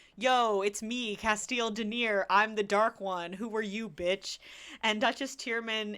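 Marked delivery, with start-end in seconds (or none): 0.2-4.4 loud, raised, grand proclaiming announcer-like voice. Retelling a book scene, imitating Cass calling from the walls. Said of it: "Cass is, like, on the walls".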